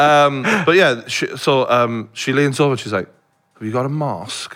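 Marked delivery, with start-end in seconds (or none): 3.5-4.6 put-on posh old woman voice, quieter. Retelling an older woman asking whether they have a mask: imitating a posh old woman. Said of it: "she's very, like, you know, posh".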